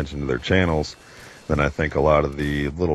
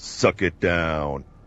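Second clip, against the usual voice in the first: action-hero one-liner delivery, tossed off casually. Asked by another speaker for another line, doing a Duke Nukem impression. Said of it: "another Duke impression".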